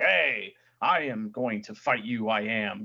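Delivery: slow, poorly delivered wrestling promo voice. Showing how Cobb's wrestling promos used to sound: imitating Cobb's bad promo. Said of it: "his promo sounded a lot like this".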